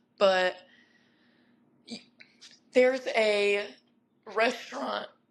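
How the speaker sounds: cracking, breaking voice mid-phrase. Listing what there is to do here, the speaker's voice cracks: voice cracking. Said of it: "Excuse me, voice crack".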